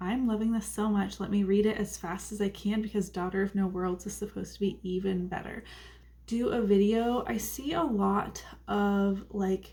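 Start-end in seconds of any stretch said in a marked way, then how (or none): none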